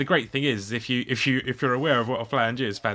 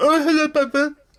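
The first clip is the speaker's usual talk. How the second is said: very high, loud, sneering mocking voice; 6 dB louder than usual. Retelling how the pigeon repeated the greeting back, imitating its mocking tone. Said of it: "but in a really mocking tone".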